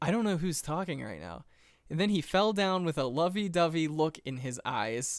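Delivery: plain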